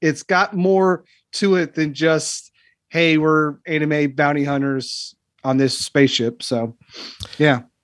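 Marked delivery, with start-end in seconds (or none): none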